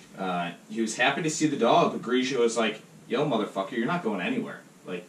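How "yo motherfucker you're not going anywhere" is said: ordinary talk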